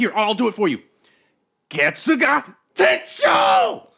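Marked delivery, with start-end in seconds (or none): 1.7-3.7 swooping, swinging anime hero voice. Showing a stranger how to do it: Ichigo impression. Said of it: "give your best impression of Ichigo".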